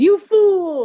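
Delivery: high cackling villain voice, "fool" stretched. Imagining the friend's reaction as a scene from The Little Mermaid: Ursula cackling voice. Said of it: "cackling and then she goes".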